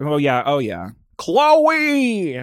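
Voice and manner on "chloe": badly done, very high, drawn-out name. Calling out a name in a horrible Caitlyn Jenner impression. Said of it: "my horrible Caitlyn Jenner impression".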